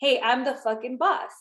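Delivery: plain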